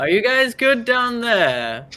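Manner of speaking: very loud, shrill booming shout. A game character uses magic to yell down into a pool; booming yell. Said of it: "make his voice boom and just try to yell".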